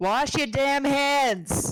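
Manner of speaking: put-on New York accent. Asked for final words at the end of the show, using a New York accent. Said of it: "that was the best New Yorker".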